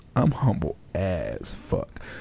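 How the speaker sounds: low, slow, mock-humble murmur.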